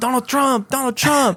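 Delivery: very high, angry, taunting heckling yell. Retelling how an angry man kept shouting back: imitating an angry yell. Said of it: "but he would get angry".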